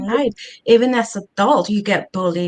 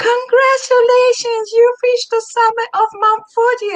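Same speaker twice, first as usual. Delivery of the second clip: very high, screamed-out announcer voice; 14 semitones higher, 4 dB louder than usual. Retelling the moment someone announced reaching the summit: imitating someone screaming out. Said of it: "screams out".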